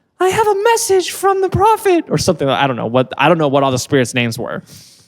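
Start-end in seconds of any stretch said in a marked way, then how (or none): 0.2-2.1 put-on female spirit voice, much higher, very high. Describing a man who channeled spirits, imitating his really high voice. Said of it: "he would raise his voice really high".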